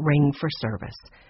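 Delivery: ordinary delivery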